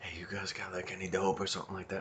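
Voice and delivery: very quiet, hushed under-the-breath mutter. Retelling how a stranger approached asking for dope: imitating someone muttering under their breath. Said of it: "under their breath were like".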